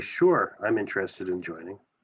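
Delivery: dripping with sarcasm, mock-eager tone. Bluffing in character, saying interest in joining: very sarcastic. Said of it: "the way that I'm saying it very sarcastically".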